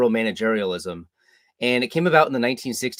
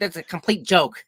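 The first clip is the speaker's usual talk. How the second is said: put-on high-pitched, cackling New York accent; 7 semitones higher than usual. Quoting a historian's reaction: cackling New York accent, imitating Murray Rothbard. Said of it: "in his cackling New York accent".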